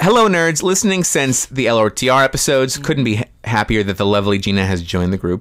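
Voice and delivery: normal talking voice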